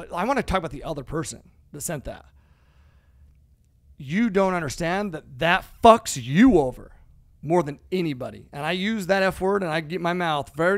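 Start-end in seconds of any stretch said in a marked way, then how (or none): 4.0-8.5 abrupt, blunt, forceful emphasis, louder, close to mic. Warning listeners about resenting others' success: abrupt, emphatic delivery close to mic. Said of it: "say it as abruptly as I can".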